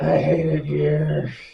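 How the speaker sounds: imitated rough New York voice. Doing a Danny DeVito impersonation after another player asks: Danny DeVito impression. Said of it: "Do a DeVito impersonation".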